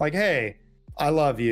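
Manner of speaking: ordinary talk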